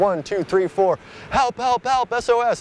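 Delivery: very high counting that breaks into loud yelling.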